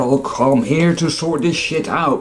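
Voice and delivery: big, tough, burly man's gravelly voice. Speaker imagines a tall burly man stepping up to a podium: gravelly burly man voice. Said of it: "with this gravelly voice and a jaw like".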